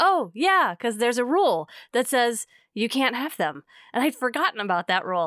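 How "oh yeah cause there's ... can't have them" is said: normal talking voice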